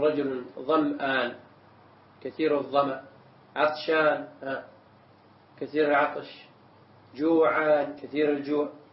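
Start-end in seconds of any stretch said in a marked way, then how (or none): none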